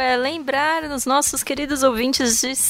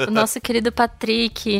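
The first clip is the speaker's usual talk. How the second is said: normal talking voice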